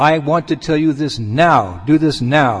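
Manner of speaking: strong, commanding tone. Showing how someone giving instructions stresses a point: speaking very strongly. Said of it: "sometimes you speak very strongly".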